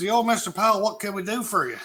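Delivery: put-on high-pitched southern US accent. Retelling how a company employee answered the phone, imitating a southern accent. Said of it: "he had this southern accent".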